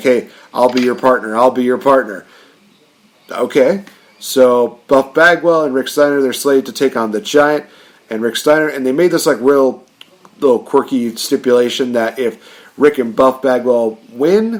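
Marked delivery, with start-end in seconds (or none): 0.0-2.3 acted eager pleading. Recapping a wrestling show, acting out a wrestler's offer: mock-pleading. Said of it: "Buff is just pleading like".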